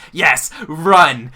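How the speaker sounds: laughing demon voice. Voicing a demon spawn laughing at futile escape attempts: laughing demon spawn voice. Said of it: "is laughing".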